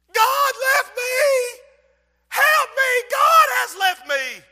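very slow, very high, drawn-out screaming cry. Retelling how a collapsed girl screamed in the yard: imitating a girl screaming. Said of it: "she started screaming".

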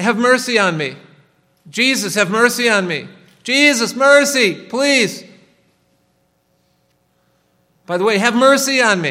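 loud, very high, crying, pleading tone. Speaker retelling a woman's plea to jesus from the text, imitating her crying out. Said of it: "constantly crying".

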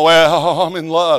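mock lovesick, smitten teen voice. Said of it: "but I'm mocking you".

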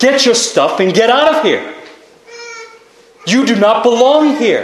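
mock fierce, furious, swooping outburst. Acting out a husband ordering another man out of his bed: acting out a furious shout. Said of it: "He's going to shout out".

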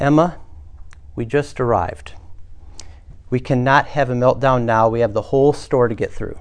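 composed, firm, even-tempered, low voice. Telling of a mother whose child yells in a store, retelling a calm but firm voice. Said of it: "say in a calm but firm voice".

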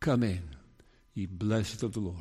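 warmest possible, soft, gentle voice. A preacher quotes what others will say before God's throne, in the warmest voice. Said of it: "say with the warmest voice".

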